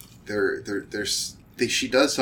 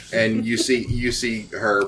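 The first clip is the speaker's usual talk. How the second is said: usual speaking voice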